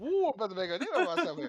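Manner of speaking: rattled off fast and high in a Cajun accent.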